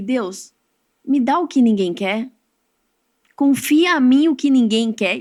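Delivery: moved, choked up, close to tears. Recalling a prayer from the day of consecration, getting emotional. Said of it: "E eu chego me emocionando".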